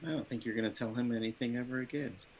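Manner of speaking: very hushed, barely voiced mutter under the breath. Muttering in character about someone, unheard: muttering under breath. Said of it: "I say under my breath".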